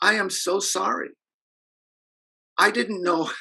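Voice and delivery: put-on high, slow, tearful sobbing little girl voice. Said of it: "And she's crying".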